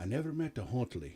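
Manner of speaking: put-on thick Irish brogue accent.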